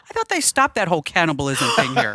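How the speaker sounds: put-on complete earnestness. Retelling a travel story, quoting what Ian said: imitating Ian, in all seriousness. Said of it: "he looked at me like in all seriousness".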